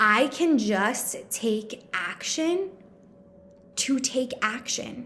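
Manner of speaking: slow, emphatic, deliberate delivery with pauses.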